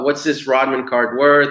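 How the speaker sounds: usual speaking voice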